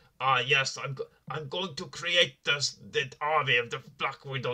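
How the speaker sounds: heavy put-on Russian accent, slow. Mocking an actor's villain line in a film: Ray Winstone's fake Russian accent. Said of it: "this fake sort of, uh, Russian accent".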